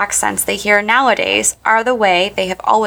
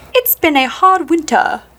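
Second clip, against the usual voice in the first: posh, refined put-on British accent, pitched up; 6 semitones higher than usual. Comparing how a Brit would say a phrase, in a refined British accent. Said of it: "Or would they say".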